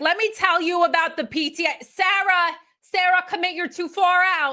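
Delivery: put-on heavy New Jersey accent. Describing a beach crowd, mimicking someone in a thick Jersey accent. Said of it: "in a very thick Jersey accent".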